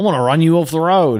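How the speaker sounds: put-on Australian accent. Describing the original one, imitating its Australian people: Australian accent. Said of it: "a lot of Australian people being like".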